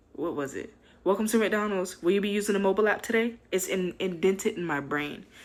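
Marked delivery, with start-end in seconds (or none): 1.1-3.4 bright, raised, scripted-sounding drive-thru attendant voice. Retelling working the drive-thru headset: mimicking drive-thru headset greeting. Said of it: "that's what I'm trying to mimic, is when I was on headset".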